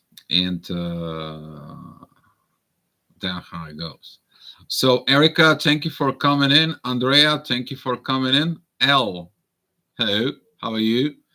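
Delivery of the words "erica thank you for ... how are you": practised, put-on British accent. Host greeting guests who came in, practicing a british accent. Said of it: "trying to practice my British accent".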